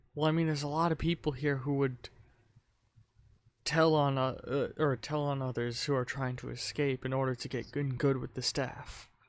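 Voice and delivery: speaking in a whisper. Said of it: "he whispers to you".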